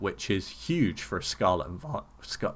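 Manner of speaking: cracking, breaking voice. A speaker going over card box prices, voice cracking. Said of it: "my voice just cracked".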